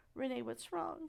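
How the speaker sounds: breaking, crackly, cracking voice. Retelling how Ricky asked what was wrong: imitating Ricky's crackling voice. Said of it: "you can hear a crackle in his voice".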